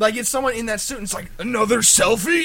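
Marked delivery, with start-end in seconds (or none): 1.4-2.4 loud, rude and insulting villain voice. Retelling the costumed performer insulting visitors: imitating an insulting Megatron. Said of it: "and he insults everyone".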